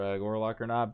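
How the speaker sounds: usual speaking voice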